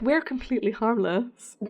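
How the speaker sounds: ordinary talk, nothing marked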